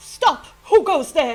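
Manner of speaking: booming, high, very loud, authoritative shout. Game master voicing a cloaked figure who notices the players: authoritative shout. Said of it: "a shout that echoes to you with a very authoritative voice".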